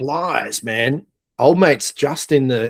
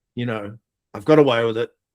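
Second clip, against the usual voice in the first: ordinary talk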